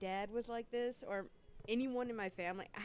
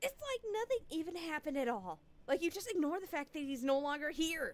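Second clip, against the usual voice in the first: heated, indignant, raised angry voice, pitched up; 6 semitones higher, 4 dB louder than usual. Reading a story aloud, accusing the father of ignoring grandfather's death: raised angry voice. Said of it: "Do not raise your voice at me".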